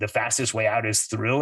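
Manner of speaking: usual speaking voice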